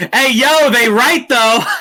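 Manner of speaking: high shouted call-out. Retelling calling out to a yelling crowd in costume: imitating own yell. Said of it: "I just yelled out".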